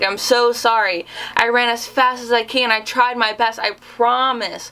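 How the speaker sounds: put-on tearful voice. Retelling a phone call to the speaker's mom, retelling a tearful apology. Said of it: "I call my mom crying".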